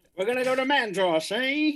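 very slow, way-off, bad New York Italian accent. Trying out an accent that another speaker says is way off: bad put-on accent. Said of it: "that's the way off that accent".

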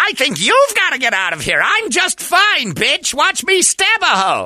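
put-on Jersey girl character voice. Given a lead-in line, the guest performs in a Skeletor Jersey Girl voice. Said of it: "perform as Skeletor Jersey Girl".

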